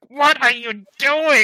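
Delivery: very high, loud, screeching goblin chief scream. Game master voices the goblin chief as a troll hammers the door: goblin chief screaming. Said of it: "you hear the goblin chief like screaming".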